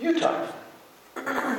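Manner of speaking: very high, soft, mock indignant voice.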